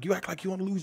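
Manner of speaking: aggressive barking. Retelling how the supervisor talked to workers: imitating an extra aggressive boss. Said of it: "coming off all extra aggressive".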